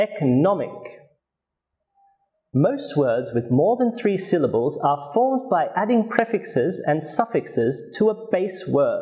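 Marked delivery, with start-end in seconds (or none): 0.0-0.7 economic: secondary stress E, primary stress NOM. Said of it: "the primary stress is on the third syllable".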